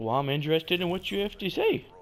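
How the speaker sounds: heavy, all-out sarcasm in swooping sing-song. Retelling what the one who leaned in said: imitating a sarcastic tone. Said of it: "all sarcastically and shit".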